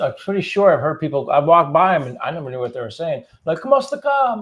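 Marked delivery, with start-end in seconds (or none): 3.4-4.4 put-on shrill calling voice, much higher. Describing people calling out to get attention, in a high-pitched calling voice. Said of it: "make it with a high pitched voice too".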